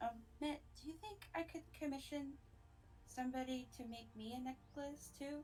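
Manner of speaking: put-on character whisper. Voicing a character who asks quietly about commissioning a necklace: whispering in character. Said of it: "he kind of whispers to Mitt".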